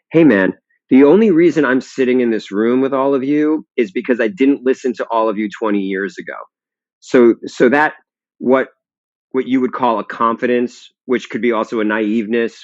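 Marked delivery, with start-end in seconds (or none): none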